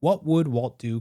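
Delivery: ordinary delivery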